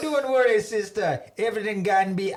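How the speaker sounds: put-on Jamaican-accented delivery. Speaker practises the scripted line, replying to her in a jamaican accent. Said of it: "reply to her in a Jamaican accent".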